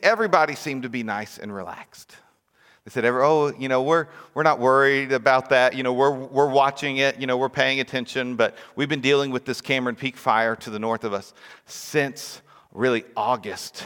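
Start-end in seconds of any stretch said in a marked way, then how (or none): none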